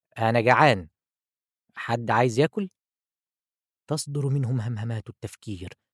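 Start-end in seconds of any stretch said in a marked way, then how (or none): 0.2-2.7 loud, raised calling voice. The narrator speaks up to the people in the room; said loudly. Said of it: "وقلت بصوت عال".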